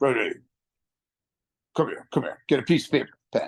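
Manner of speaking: grave, low, deep, serious voice. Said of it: "in a deep voice".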